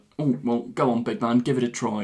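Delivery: plain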